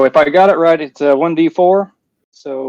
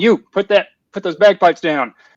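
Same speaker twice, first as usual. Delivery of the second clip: goblin voice, calling out; 4 semitones higher than usual. Player in a tabletop game yelling at a goblin, yelling in goblin voice. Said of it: "yelling to the goblin in goblin tone".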